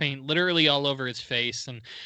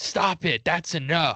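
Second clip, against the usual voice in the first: mock yelling, imitated shout, delivered slower; 2 semitones higher than usual. Retelling how one man went off on another, retelling a yell. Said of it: "he yelled".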